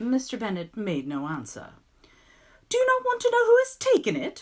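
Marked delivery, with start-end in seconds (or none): 2.7-4.4 very high, loud, impatient outburst. Reading the novel, Mister Bennet's wife presses her silent husband: impatient cry. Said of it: "cried his wife impatiently".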